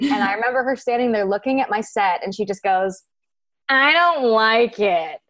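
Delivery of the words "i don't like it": very drawn-out, slow, deliberate, distinctive delivery. Retelling how the chief creative officer judged the set: imitating her distinctive voice. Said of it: "I'm about to do an imitation".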